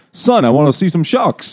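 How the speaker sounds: put-on Italian-American accent. Retelling a movie scene with a family from Queens: Italian-American stereotype voice. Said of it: "the nice Italian-American stereotype".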